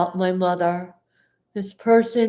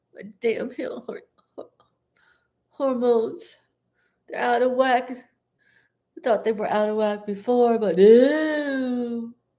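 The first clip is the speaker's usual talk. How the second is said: crying, tearful voice; 3 semitones higher than usual. Speaking on camera about a person who wronged them, the speaker is crying. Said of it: "I'm gonna cry".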